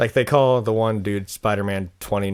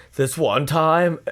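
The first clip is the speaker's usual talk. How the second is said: California dude voice, pitched up; 8 semitones higher, 3 dB louder than usual. Retelling a sketch character's line: Totally Kyle voice. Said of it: "the California dude".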